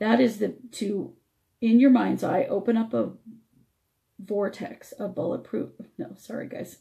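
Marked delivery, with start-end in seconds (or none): 5.0-6.8 soft, strained voice cracking to nothing. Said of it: "my voice is really, I'm really struggling".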